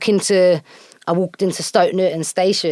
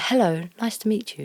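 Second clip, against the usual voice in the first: soft, formal put-on voice; 3 semitones higher, 7 dB quieter than usual.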